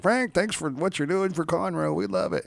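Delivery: high, bright-voiced, grateful local resident voice.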